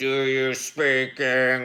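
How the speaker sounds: heavy, menacing, threatening, demanding tone. Retelling a question he once asked someone, retelling a menacing question. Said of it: "it sounds way more menacing than that because it was just the type of voice".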